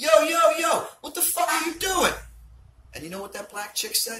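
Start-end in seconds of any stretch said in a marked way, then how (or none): 0.0-2.1 very high, shrill, very loud yelling. Retelling leaning out of a van at a thief: retelling a shout. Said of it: "so I leaned out and shouted".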